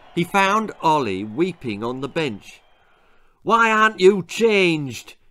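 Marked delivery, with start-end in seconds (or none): 3.4-5.0 loud, high, bawling, bellowing demanding yell. Finding Ollie weeping on the bench, a man is bawling at him. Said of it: "he bawled".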